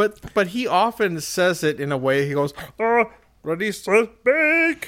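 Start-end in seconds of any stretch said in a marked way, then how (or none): 2.8-4.9 high, pinched tenor, slowly stretched out. Retelling how someone says a catchphrase: imitating the Sean voice. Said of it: "it's basically the Sean voice".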